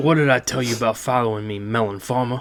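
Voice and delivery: put-on old man voice.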